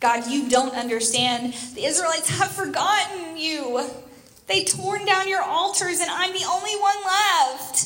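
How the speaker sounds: put-on high, whiny complaining tone. Acting out a man complaining to God, imitating a whiny tone. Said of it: "You can just hear that whiny tone in his voice".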